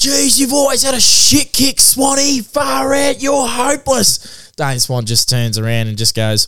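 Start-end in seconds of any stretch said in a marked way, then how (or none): 0.0-4.5 put-on very high, drawn-out drunken yell. Speaker retells a drunk football fan heckling a player at the boundary, retelling a drunk fan's yell. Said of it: "drunk Cranbourne football club fans just yelled out".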